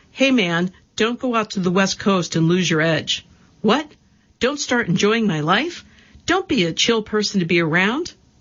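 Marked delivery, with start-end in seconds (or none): 0.2-3.3 put-on East Coast hard-man tough guy voice. Quoting someone's warning about going to the West Coast: imitating a tough guy voice. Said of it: "In his tough guy voice".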